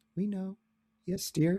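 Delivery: put-on sweet deadpan old-lady voice. Answering a question, the speaker acts out the old ladies, imitating sweet deadpan old ladies. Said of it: "the deadpan sweetness of the old ladies".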